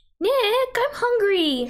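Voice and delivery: high-pitched character voice pitched way up, squeaky. Reading a game line aloud to friends: Sayori voice. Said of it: "Do you want me to read this as a Sayori voice?".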